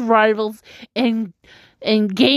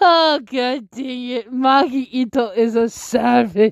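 talking through laughter. Reacting to a wrestler's promo after reading it out: laughing while talking. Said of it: "I'm sorry I'm laughing so much".

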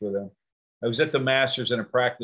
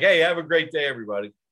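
mock super friendly, loud and cheery; 4 semitones higher, 5 dB louder than usual. Retelling how the golfer left the group: imitating a very friendly goodbye. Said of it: "The nicest guy".

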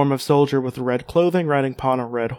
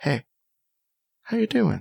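soft, soothing, comforting, gently swooping voice; 6 semitones higher, 5 dB quieter than usual. Testing out how to sound subtle, trying to sound comforting. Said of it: "let me try to be comforting".

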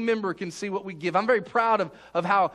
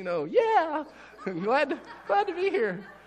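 small squeaky voice, much higher, slower; 8 semitones higher than usual. Recounting trying to fit in among men in three-piece suits: little squeaky voice. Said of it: "I got my little squeaky voice".

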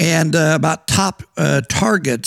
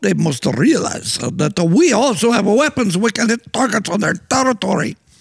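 botched put-on Russian accent, pitched high; 5 semitones higher than usual. Quoting what a man added in his speech, in a bad Russian accent. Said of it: "I messed up my Russian accent".

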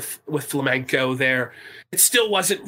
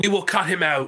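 ordinary talk

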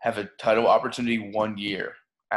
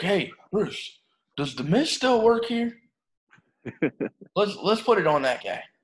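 put-on country accent, pitched a touch higher; 10 semitones higher than usual. Imagining what Vince said to Bruce, imitating him in a country accent. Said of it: "I don't know why I'm giving him a country accent".

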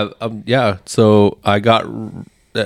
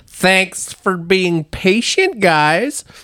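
high, slow, drawn-out Wisconsin house-mom voice; 9 semitones higher than usual. Quoting paddlers thanking people for waiting, imitating a Wisconsin house mom. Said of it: "they sound like a Wisconsin fucking house mom".

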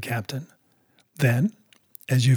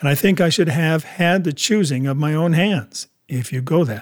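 ordinary delivery, nothing marked

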